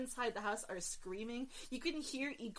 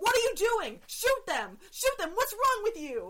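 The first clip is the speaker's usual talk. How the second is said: put-on screaming, much higher, louder; 9 semitones higher, 11 dB louder than usual. Retelling a scene where turrets won't fire, imitating Till screaming. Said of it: "Till's still screaming".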